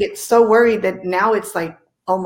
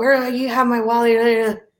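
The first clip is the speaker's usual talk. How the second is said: put-on, slurring drunk voice; 3 semitones higher than usual. Retelling a drunk phone call, imitating Angela's drunk slurring. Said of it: "she's slurring and drunk".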